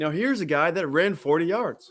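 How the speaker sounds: put-on American accent in a play-by-play announcer style. Describing a forty-yard run, showing off a put-on American accent. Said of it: "It's a good American accent".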